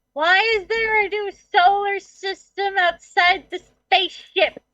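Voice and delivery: very shrill, high voice. Over the spaceship comms, very shrill Miss Kitty voice. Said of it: "you hear a very shrill voice going".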